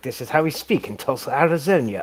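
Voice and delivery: put-on stern voice with a strong English accent. Describing a vampire comedy series, imitating an actor's stern english voice. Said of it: "really, really stern English voice".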